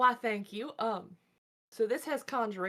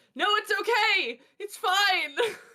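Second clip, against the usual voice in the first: very high, very slow, drawn-out panicked yell; 11 semitones higher, 6 dB louder than usual. Playing a character switching languages to calm a tree: panicked yelling at a tree.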